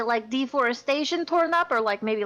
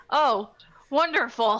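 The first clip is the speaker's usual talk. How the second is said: ironic, sardonic, sarcastic delivery; 3 semitones higher, 4 dB louder than usual. Repeating another player's "wonderful" back to them: imitating a sarcastic tone. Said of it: "Was that a sarcastic wonderful?".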